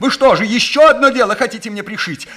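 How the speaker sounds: very high-pitched, frightened, scared yelling. Narrator reads a burglar answering a detective, frightened shouting. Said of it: "продолжал кричать взломщик, теперь уже испуганным голосом".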